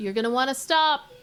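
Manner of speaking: loud, high-pitched yelling. Voicing a character warning an approaching figure: yelling out a warning. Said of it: "And she yells out".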